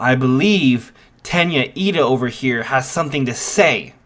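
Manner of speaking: ordinary talk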